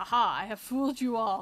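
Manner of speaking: put-on, fake deep voice. Joking about being tall for a female: put-on deep voice. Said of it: "deepen my voice and go".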